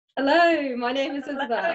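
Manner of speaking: put-on loud, tipsy, few-glasses-in drunk voice. Following a voice coach's request to imagine being drunk: pretending to be drunk. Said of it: "imagine that you're drunk".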